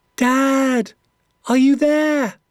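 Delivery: very high small voice, "dad" drawn out. Narrator reads the speaker calling out for Dad in the dark forest, small high voice. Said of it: "My small, high voice echoed".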